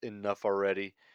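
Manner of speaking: ordinary talk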